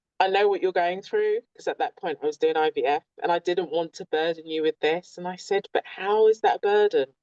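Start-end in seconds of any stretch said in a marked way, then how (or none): none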